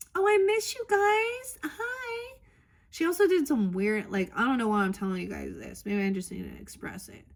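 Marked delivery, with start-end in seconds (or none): 0.1-2.4 very high, very slow, drawn-out fake sweetness. Imitating the sister-in-law's greeting: imitating fake affectionate greeting. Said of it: "that weird toxic love, fake".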